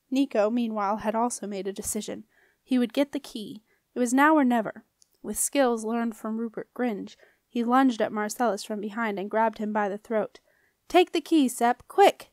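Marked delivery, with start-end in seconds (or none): 10.8-12.1 raised, pitched-up yell. Nico grabs Marcellus by the throat and yells to Sep to take the key: yelling. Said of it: "he yelled".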